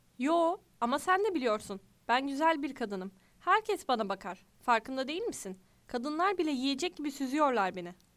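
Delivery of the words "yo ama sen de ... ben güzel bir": usual speaking voice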